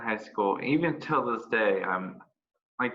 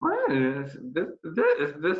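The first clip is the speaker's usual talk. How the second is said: higher voice, breaking and cracking. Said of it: "my voice is going".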